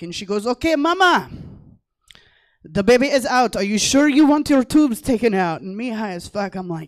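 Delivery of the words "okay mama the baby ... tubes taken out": put-on heavy Russian accent, booming and very loud. Retelling what the woman doing her C-section said, in a thick Russian accent. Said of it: "she was a Russian and she had a really thick accent".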